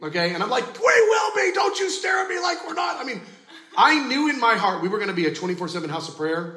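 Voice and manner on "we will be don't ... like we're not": wild, crazy, very high-pitched yelling. Recounting yelling this at about six people in a loud room: retelling a yell. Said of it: "it was loud and crazy".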